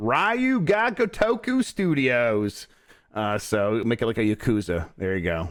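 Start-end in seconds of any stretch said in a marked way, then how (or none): 0.0-2.7 heavy American accent, very high, very slow, drawn out. Suggesting a studio for the turtles game, in a very american accent. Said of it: "with a very American accent".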